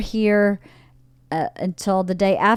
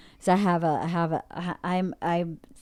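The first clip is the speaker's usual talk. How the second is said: soft, slow stuttering, stuck on the words; 6 dB quieter than usual. Starting to lay out upcoming plans, the speaker gets tangled, stuttering. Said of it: "I'm stuttering".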